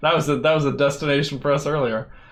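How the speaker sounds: fast, laughing delivery.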